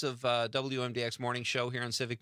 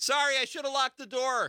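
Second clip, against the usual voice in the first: loud, carrying acted yell; 13 semitones higher, 4 dB louder than usual. Telling a story, acting out a man yelling an apology in a restaurant: retelling a loud yell. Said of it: "he yells so loud".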